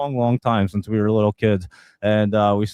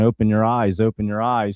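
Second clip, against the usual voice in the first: ordinary talk, nothing marked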